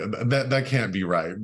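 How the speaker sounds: ordinary delivery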